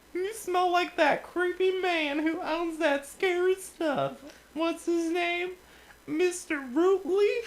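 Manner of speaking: squeaky voice pushed high and loud. Reading a story, a character holding her nose speaks to the listener, Minnie Mouse voice. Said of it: "I have to do this voice again".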